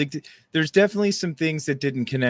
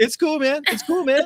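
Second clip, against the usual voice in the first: put-on strained encouraging voice, pitched higher; 12 semitones higher than usual. Retelling a friend's reply while playing slowly: imitating Mike sounding encouraging. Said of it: "he's encouraging, but I can tell the sound of his voice".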